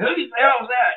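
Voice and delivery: put-on yelling. Recounting a man coming out of a trailer on the lot, imitating him yelling. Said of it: "he's like yelling".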